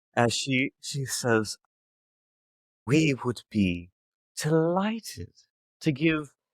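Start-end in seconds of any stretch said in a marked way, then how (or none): 2.9-6.3 smooth suave dragon lady voice, higher. Voicing a dragon lady who smiles and leans down: suave dragon lady voice. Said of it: "very suave for a dragon lady".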